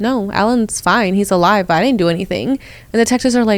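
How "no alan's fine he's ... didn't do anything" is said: normal talking voice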